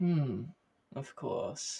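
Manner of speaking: calm, unfazed, unsurprised, unbothered tone. As they all pull out, Thrundrazi looks and answers without annoyance or surprise. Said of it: "without any sort of kind of um, annoyance or surprise".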